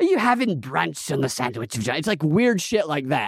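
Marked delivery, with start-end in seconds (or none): 0.0-2.0 mock uppity British woman's accent. Retelling what a British woman on a show said: imitating an uppity British woman. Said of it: "but she says it like".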